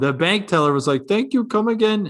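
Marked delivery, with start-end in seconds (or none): 1.1-2.1 mock Indian accent, pitched up. Quoting a bank teller's thanks in a rude funny voice, a stereotypical Indian accent. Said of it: "and it was an Indian voice".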